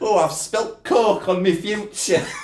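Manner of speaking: very high, loud put-on northern English accent. A southern speaker joking about clumsy people, in a put-on northern english accent. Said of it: "We do northern accents".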